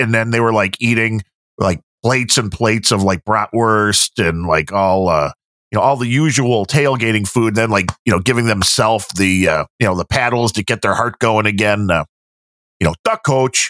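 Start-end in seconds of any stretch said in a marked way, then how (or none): 13.1-13.7 slightly raised, put-on Chicago accent. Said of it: "That's, that's Chicago".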